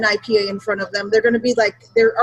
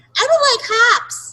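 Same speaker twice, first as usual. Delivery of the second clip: very high, squeaky put-on voice; 13 semitones higher than usual. Imitating wimps who say they don't like hops: high put-on voice. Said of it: "I'm doing a high voice".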